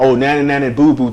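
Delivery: normal talking voice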